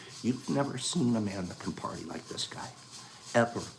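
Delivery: whispered speech. Praising how Eric parties, to listeners, whispering. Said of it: "I'm whispering".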